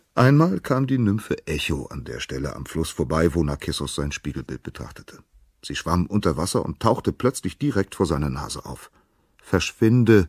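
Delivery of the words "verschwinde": sudden, loud cry, pitched up. Narkissos calls to the nymph Echo, who has broken his reflection, calling out. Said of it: "rief Narkissos".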